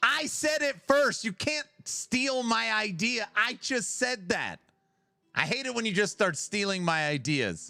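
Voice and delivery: high, screaming, ranting outburst. Arguing with another player over who had a build idea first: screaming. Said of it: "I'm sorry for screaming".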